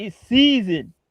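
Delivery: put-on heavy Southern accent. Quoting what she said: imitating a thick Southern accent. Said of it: "That's some Southern stuff".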